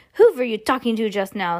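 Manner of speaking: curt, sharp, snapped tone. Reading a story aloud, voicing the witch leader questioning a grandmother, snapping. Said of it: "snapped the Grand High Witch".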